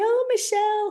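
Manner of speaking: silly voice, squeaky and very high. Speaker voices her inner critic, Petty Betty, in a silly voice. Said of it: "she comes with this silly voice to say".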